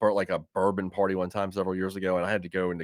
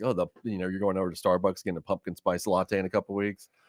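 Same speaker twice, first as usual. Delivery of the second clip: ordinary talk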